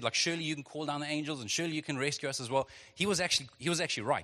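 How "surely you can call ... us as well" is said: ordinary delivery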